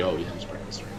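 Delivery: very soft, low mumble.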